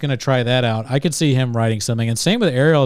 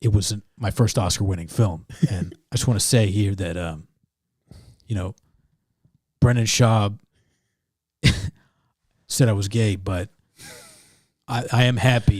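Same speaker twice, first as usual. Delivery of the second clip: low voice, done deliberately badly; 4 semitones lower, 3 dB quieter than usual. Giving an asked-for Oscar acceptance speech: terrible Vin Diesel impression. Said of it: "That was terrible. I tried".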